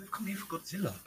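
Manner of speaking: soft, hushed voice. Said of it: "How are you so quiet out of nowhere".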